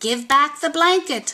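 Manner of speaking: tiny, small, high little voice. A hidden speaker calls up to a fleeing coyote: tiny voice. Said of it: "said a tiny voice".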